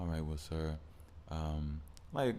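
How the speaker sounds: put-on, overly calm, goading tone. Retelling an argument, imitating the other man: mock-calm. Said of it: "you trying to be calm to like try to poke at me".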